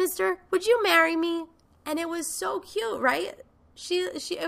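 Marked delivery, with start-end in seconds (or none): 0.0-1.4 put-on little girl's voice, high-pitched and eager. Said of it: "she was like".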